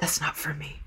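put-on whisper. Picturing a moviegoer whispering to themselves in a dark theater: imitating someone whispering. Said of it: "just whispering to themselves".

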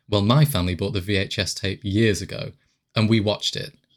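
ordinary delivery

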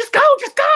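high, loud, panicked pleading.

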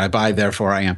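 ordinary talk, nothing marked

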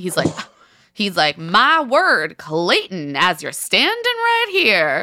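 put-on Southern accent, old-Western style. Recapping a scene, quoting Jesse Palmer's reaction in a Southern accent. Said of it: "I love that Jesse Palmer suddenly has a Southern accent".

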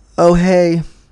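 mock begrudging, bored tone. Retelling how someone greeted them at the airport: imitating a disinterested greeting. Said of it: "looked at me rather disinterested and was all".

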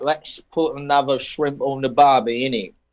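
fake Australian accent gradually slipping into British accent. Mocking accents that drift, an australian accent turning british. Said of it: "It goes to British real quick".

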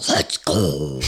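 very low, very deep monster voice. Imitating their own early-morning call, in a lava-monster voice. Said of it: "You sound like a lava monster".

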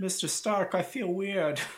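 put-on Brooklyn New York accent. Joking about a story's ending, the speaker quotes Spider-Man in a Bronx-Brooklyn accent. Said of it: "that was an interesting accent you used there".

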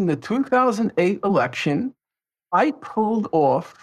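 usual speaking voice

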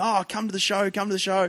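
put-on ingratiating, wheedling tone. Retelling how a movie guest invited a famous guest: imitating someone schmoozing. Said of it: "he's schmoozing to him".

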